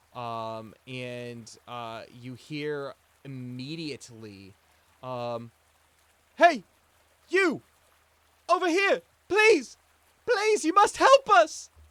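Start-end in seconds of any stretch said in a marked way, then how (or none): 6.4-11.7 very loud, very high, shaky, frightened cry. Game narrator voicing an unseen person calling for help, young shaky frightened voice. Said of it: "This sounds like a young voice, um, and shaky".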